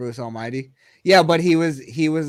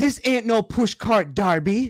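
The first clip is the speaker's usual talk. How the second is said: bad put-on Jamaican movie accent, pitched up; 7 semitones higher than usual. Mocking how a film character talks, the speaker quotes his line: mock jamaican accent. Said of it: "Who the fuck talks like that?".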